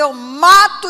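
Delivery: all-out scream, very loud, drawn out. Retelling the scene as neighbours heard it: imitating a girl screaming. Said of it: "uma menina gritando".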